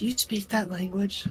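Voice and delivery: quiet, soft, hushed half-whisper under the breath. In a tabletop game, half-whispering a question to the character standing beside them. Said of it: "and I just whisper".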